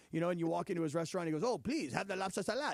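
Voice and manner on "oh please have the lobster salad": put-on French accent. Retelling how a French friend talks: imitating a French friend. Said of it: "this is the way this guy talks".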